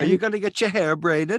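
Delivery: put-on Swedish-like accent. Chatting about a trip to Jamaica, the speaker asks a question in a Swedish-sounding accent. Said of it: "you sound like you're Swedish again".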